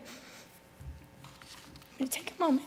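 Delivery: soft, slow, choked-up whisper, voice catching with tears. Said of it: "got me emotional".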